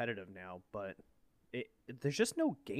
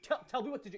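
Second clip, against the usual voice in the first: put-on scream, higher-pitched; 13 semitones higher than usual. Retelling a gaming partner demanding directions: imitating Mitchell screaming. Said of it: "he's screaming at me".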